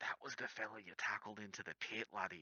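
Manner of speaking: soft whispered voice. A character leans over and speaks into another character's ear: whispering in his ear. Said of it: "leans over and whispers in his ear".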